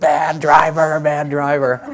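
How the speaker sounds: very slow, drawn-out, angry yell. Retelling a story of someone yelling at a confused driver, retelling a shout. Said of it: "they started shouting".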